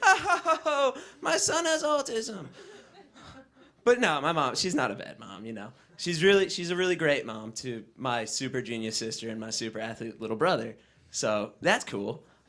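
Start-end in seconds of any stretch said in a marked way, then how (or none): 0.0-2.4 high, slow voice full of laughter. A son imitates his mom, who laughs about his problems: imitating mom laughing. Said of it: "She just sits back and laughs about it".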